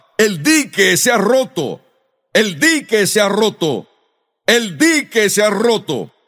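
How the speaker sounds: usual speaking voice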